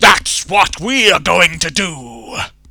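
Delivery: very loud, booming, high-pitched, grand bellow. Narrating a story, the king leaps onto the table and bellows: bellowing. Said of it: "the king leapt up on the table and bellowed".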